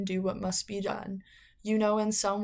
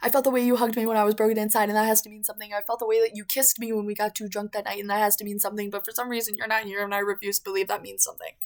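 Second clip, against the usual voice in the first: very fast, gabbled speech in a raised voice; 5 dB louder than usual. Between songs on a show, a host rushes through a personal story, very fast. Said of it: "I'm gonna say it real fast".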